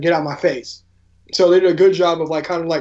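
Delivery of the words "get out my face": ordinary delivery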